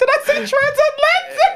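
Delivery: very high, mock-posh squeaky fancy voice.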